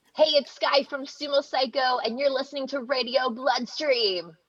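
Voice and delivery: high-pitched, punchy radio station announcer voice. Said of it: "shout little, like, a radio reading for us".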